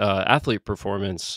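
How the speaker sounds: usual speaking voice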